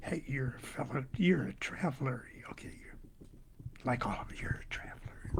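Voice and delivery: breathy, very quiet, hushed whisper. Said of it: "whispers in your ear".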